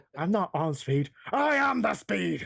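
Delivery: throat-straining, high, boastful anime warrior voice. Replying to another speaker's accusation in a voiced bit: Vegeta voice. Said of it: "Trying to do Vegeta really hurts your fucking voice".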